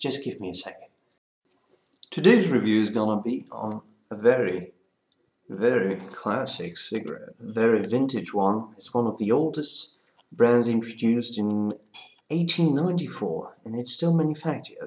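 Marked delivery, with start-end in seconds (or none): 2.1-14.9 put-on British accent, best attempt. Beginning a cigarette review: best British accent. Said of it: "I'm gonna take my best British accent".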